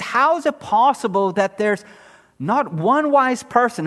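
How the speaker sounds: plain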